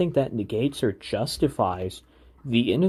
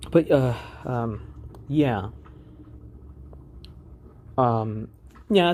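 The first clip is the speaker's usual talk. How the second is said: choking, very slow, dragged-out filler sound. A podcaster keeps talking right after choking; choking. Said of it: "sorry, I'm choking".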